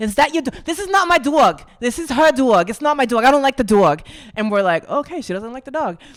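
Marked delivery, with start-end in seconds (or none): 0.0-4.0 put-on Puerto Rican New York accent. Act out a conversation with a woman who noticed your little dog, in an attempted Nuyorican accent. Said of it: "it's like the Nuyorican accent".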